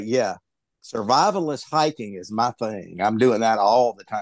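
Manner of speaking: dry, sarcastic, mock-serious delivery. Answering another speaker with a mock claim about hiking: sarcastic. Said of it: "I'm gonna sarcastically say".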